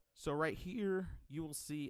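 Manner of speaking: voice breaks while talking. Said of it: "voice crack".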